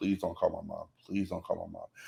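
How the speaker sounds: put-on begging, pleading tone repeated again and again. Retelling begging a teacher not to call home: imitating own begging. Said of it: "I begged her not to call home".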